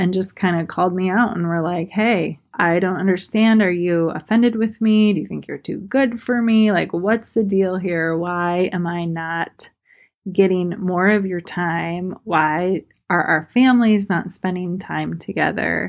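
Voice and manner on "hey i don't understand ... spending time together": ordinary talk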